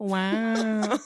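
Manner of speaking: the word "wow" stretched out long. Answering a request to do Owen Wilson saying wow: Owen Wilson "wow". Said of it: "great impersonator of Owen Wilson".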